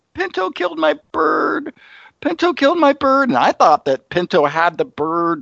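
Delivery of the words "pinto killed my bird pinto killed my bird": put-on very high, ragged, shrill, raspy scream. Retelling what she screamed when the cat got her bird: imitating someone screaming.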